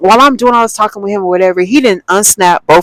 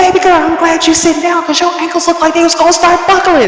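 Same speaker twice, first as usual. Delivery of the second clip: put-on yell, higher; 10 semitones higher than usual. Retelling what a loud man said at a party: imitating a man yelling. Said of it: "Why are you yelling".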